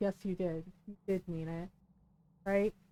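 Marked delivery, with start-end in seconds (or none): 0.0-1.7 hushed, very quiet, soft voice. Retelling own reply to another mom: imitating own quiet reply. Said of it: "very quietly said".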